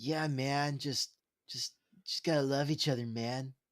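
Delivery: put-on mellow peace-and-love hippie voice. Co-host responding after the other says he sounds like a hippie: hippie voice. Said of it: "without that voice?".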